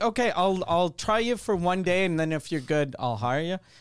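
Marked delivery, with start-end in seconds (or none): none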